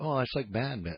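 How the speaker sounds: calm, low, soft, dead-serious voice.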